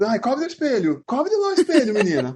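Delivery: put-on fretting old person voice.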